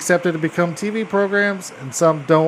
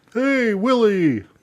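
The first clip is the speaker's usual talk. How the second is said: alien character voice with pitch lifted; 6 semitones higher than usual. Answering what the character sounds like: Alf voice. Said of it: "what does Alf sound like?".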